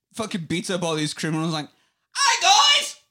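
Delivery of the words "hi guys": shrill, very high, loud, squealing silly voice. Pitching a silly bit where Batman greets criminals: funny high Batman voice. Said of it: "Batman had like the funniest high voice you ever heard".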